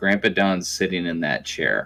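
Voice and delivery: soft, hushed, secretive stage whisper. Retelling how a son half-whispered at a crowded table: imitating a half-whisper. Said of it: "Henry pulls me close and whispers to me".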